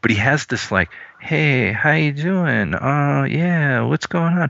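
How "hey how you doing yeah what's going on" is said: meek, subdued voice, high and slow. Imitating an actor's quiet delivery: subdued Adam Sandler delivery. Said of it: "almost the sort of intimidated character".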